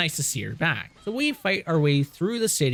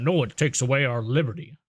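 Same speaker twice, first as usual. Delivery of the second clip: put-on American accent; 3 semitones lower than usual. Joking about a statue rebuilt fast: put-on American accent. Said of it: "that's my American accent".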